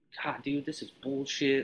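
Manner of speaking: mock, muttered under the breath. Retelling how everybody complained on a cold wet march: retelling muttering under breath. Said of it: "kind of under their breath".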